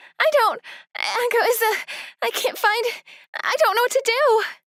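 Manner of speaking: frantic, panicked, halting, broken-off speech. Phoning at night because someone is gone and can't be found, panicked. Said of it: "calm down".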